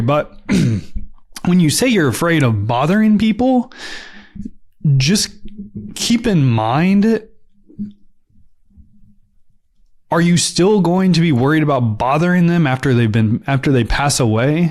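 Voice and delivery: getting emotional, a little choked, mind drawn out. Speaker tells listeners who fear bothering people to think again, a little choked up. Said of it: "I'm getting a little choked up here".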